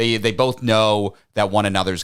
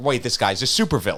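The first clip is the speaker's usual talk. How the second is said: ordinary talk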